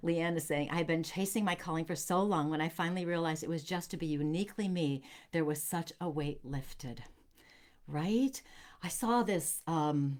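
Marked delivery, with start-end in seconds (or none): none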